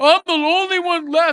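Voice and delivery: grumpy, put-upon complaining. Retelling the story of Elijah in the cave: grumpy Elijah voice. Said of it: "he's, like, all grumpy".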